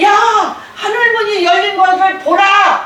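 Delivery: high, loud, proclaiming shout. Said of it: "큰 소리를 지르며".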